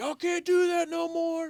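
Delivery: shrill, very high screaming holler. Retelling how a man came out on his front porch during a burnout, imitating a man screaming. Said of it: "this man screaming, hollering".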